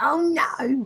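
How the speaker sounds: put-on shrill raging outburst, very high pitch. Show how your friend sounds when he has problems with his PC, imitating Nathan raging. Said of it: "he sounds like this. He's like".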